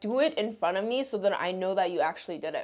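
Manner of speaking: ordinary delivery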